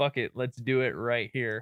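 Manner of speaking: put-on, totally pleading voice. Retelling how a girl in a scene sounded: imitating someone pleading. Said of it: "totally pleading".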